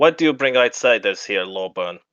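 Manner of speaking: put-on dwarf voice with German-style accent. Storyteller voicing a dwarf addressing another character, in a German-sounding Dwarvish accent. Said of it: "you watch as his voice switches to German".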